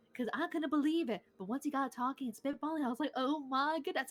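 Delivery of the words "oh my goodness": put-on joyful, delighted outburst. Retelling own reaction to hearing him talk: retelling own joyful exclamation. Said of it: "I couldn't even contain my joy".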